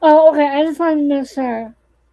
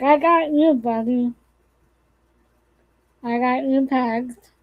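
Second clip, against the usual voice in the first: ordinary talk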